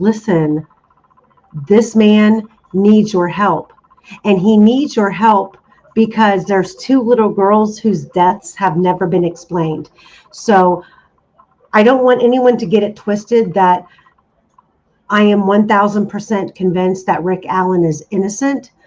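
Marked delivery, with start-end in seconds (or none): none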